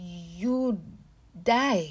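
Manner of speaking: stammering, stuttering through clenched teeth. Narrator reads Abeni speaking to the girl, stammering through clenched teeth. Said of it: "Abeni stammered words through clenched teeth".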